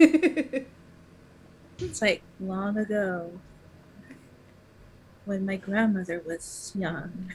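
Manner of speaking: slow, drawn-out, eerie put-on creepy voice. Relaying the haunted basement story to everybody, creepy Eddie voice. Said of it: "in the creepy Eddie voice".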